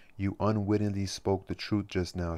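ordinary delivery

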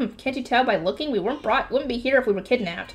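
plain reading voice

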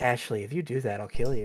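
put-on soft, gentle voice. Imitating how Goose talks to Ashley, imitating Goose's gentle voice. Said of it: "She has such a gentle voice".

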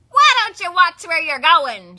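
very loud, high honking goose voice at full blast. Reading the story aloud, voicing Lucy Goosey: Lucy Goosey honking voice. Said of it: "She honked".

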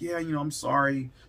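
ordinary delivery

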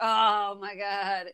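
tired dog voice, weary and completely fed-up. Voicing the family dog, who is sick of being walked: put-on tired dog voice. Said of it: "Now he's like".

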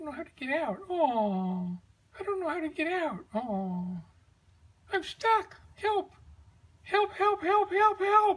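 soft, tiny, pleading puppet voice, drawn-out oh's. Comedy sketch, a little marionette left by a spider speaks: tiny marionette voice. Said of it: "Hi, I am a little tiny marionette".

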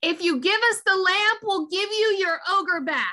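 high, declaiming tone. Playing a character in the game, making an offer said loudly. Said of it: "I will say loudly in Dwarvish".

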